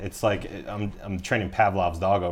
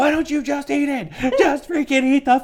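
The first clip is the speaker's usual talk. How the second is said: mock yelling at a much higher pitch; 7 dB louder than usual. Retelling a story, the speaker imitates Heidi yelling at her. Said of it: "Heidi's yelling at her now".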